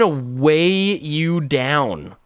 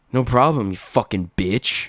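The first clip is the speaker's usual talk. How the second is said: mock aggressive tone in a lower voice; 4 semitones lower than usual. Acting out a guy from dating apps turning on a woman: imitating an aggressive guy.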